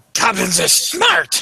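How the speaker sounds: high, slow, indignant goblin squawk.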